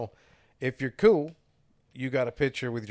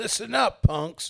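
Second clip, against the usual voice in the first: put-on cranky voice, much higher in pitch; 9 semitones higher, 3 dB louder than usual. Explaining how a Bible verse applies to us, mock-cranky Chuck voice. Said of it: "When you put on the Chuck voice, you get kind of cranky and angry".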